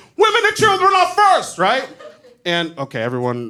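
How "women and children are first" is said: very high, bad put-on Irish accent drifting Jamaican. Quoting an Irish guy on the Titanic in a bad Irish accent. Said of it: "I realized that wasn't a good Irish accent. Um, if anything, that was Jamaican at best".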